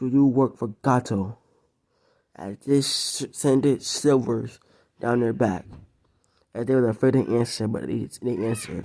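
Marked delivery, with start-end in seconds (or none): 0.0-1.4 voice of a demon. Telling a story, voicing a man questioning two others, demonic voice. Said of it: "Then in a demonic voice".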